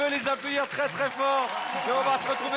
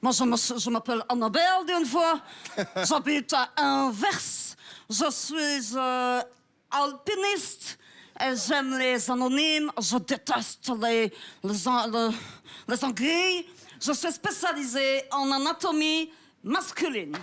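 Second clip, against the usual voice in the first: put-on Belgian-accented French. Playing a letter game, introducing herself with letter A words, in a Belgian accent. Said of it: "avec l'accent belge".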